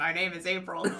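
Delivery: put-on low, deep baritone voice. Showing how jarring a reading would sound: baritone voice. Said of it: "you're like baritone. You're like".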